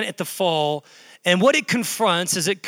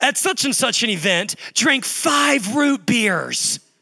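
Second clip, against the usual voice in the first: slightly jealous, envious tone; 4 semitones higher than usual. Parent retells what the daughter said yesterday, mimicking a jealous, envious tone. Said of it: "she said it like with this twinge of jealousy and envy".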